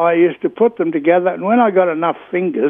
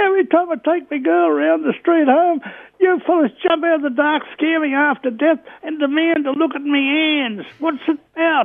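very high-pitched, hopping-mad, furious-sounding screaming; 10 semitones higher than usual. Telling a story about a man who had just taken his girlfriend home, retelling a man's screaming. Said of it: "he jumped up and down screaming".

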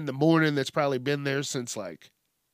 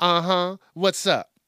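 sassy woman voice, higher and louder; 4 semitones higher, 5 dB louder than usual. Imitating a phone assistant answering with attitude: sassy assistant voice.

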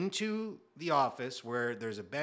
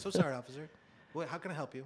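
sudden prim, proper, polite British headmaster manner; 2 semitones higher, 4 dB quieter than usual. Retelling how an arrested woman suddenly turned polite: imitating a prim British headmaster. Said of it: "like, a headmaster at, like, a British school".

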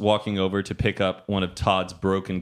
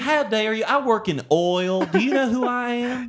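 very high pitch, indignant, accusatory tone; 3 dB louder than usual. Comparing how Texans from different places talk, a mock-accusatory Houston voice. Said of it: "Houston's more accusatory".

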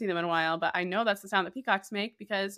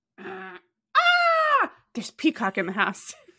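put-on high, sing-song little-boy voice, drawn-out "ah"; 11 semitones higher, 6 dB louder than usual. Retelling how her son would look at her and ask: imitating her son. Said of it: "And he'd go".

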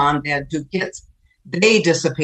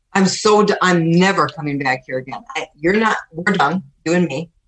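ordinary talk

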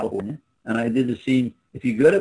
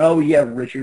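loud, put-on exclaiming cry at full voice; 2 semitones higher than usual. Retelling how she called out his name: imitating someone saying it loudly. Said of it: "she said it real loud".

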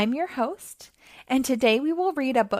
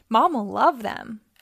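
ordinary delivery, nothing marked

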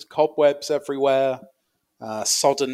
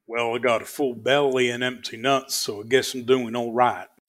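playful put-on cowboy voice. Having promised to do all the lines in character: fun cowboy voice. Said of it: "I'll do them all in fun cowboy voices".

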